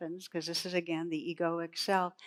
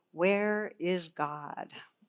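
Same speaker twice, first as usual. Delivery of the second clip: strict, commanding, stern, firm tone. Retelling a joke where a clergyman questions a boy: imitating a stern question. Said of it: "says sternly".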